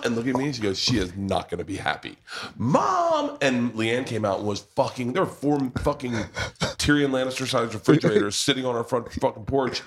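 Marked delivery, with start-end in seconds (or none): 0.8-3.4 acted, gleeful, smug sing-song gloat, drawn out. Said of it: "shit-eating grin".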